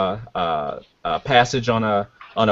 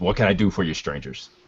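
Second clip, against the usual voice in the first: impatient muttering under the breath, quieter; 6 dB quieter than usual. A game master voices a man turning to the strangers, impatient muttering under breath. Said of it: "kind of mutters under his breath".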